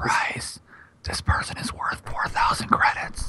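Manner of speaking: soft, hushed whisper, barely voiced. Acting out what it whispers in the player's ear: whispering. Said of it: "And then it whispers in your ear".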